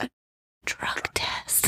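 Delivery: secretive, embarrassed whisper, breathy and soft under breath. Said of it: "whisper it".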